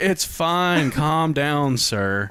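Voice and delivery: put-on very slow, unbothered, nonchalant calm. Retelling a dream's police phone call, imitating nonchalant cops. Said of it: "just all nonchalant".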